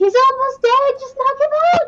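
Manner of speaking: very loud, high-pitched yell. In a tabletop game, speaking as Camille, yelling out during combat. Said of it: "Camille's gonna yell out".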